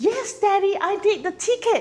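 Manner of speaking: put-on little girl's voice, very high. Demonstrating a father-daughter role play, the daughter's line in a little girl voice. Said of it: "for a man to project a little girl's voice".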